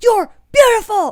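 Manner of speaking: shrill, very loud, high-pitched bellowing yell. Describing a creator who yells into the camera: Angry Reactions yelling impression. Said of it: "he just like yells into the camera".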